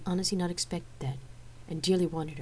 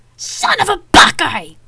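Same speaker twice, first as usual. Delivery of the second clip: spat out, very high pitched, shrill, very loud; 13 semitones higher, 19 dB louder than usual. Tired of an officer's excuses, the speaker turns to Atreus and spits the words. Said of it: "I spat as I turned to Atreus".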